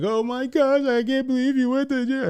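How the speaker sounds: very high, super-emotional boohoo crybaby voice. Imagining how she might react to the news: mock crybaby voice. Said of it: "super emotional, crybaby, boohoo".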